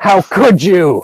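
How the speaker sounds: put-on anger, loud and high. Voicing a character who slaps another character and confronts him: really angry. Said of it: "she looks, like, really angry".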